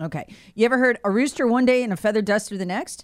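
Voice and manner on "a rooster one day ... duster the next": ordinary delivery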